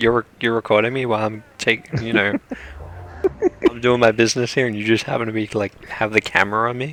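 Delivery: play-acted, aggrieved, indignant, complaining animal voice. Voicing a creature angry at being filmed: mock annoyed voice. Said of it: "he's pissed at you".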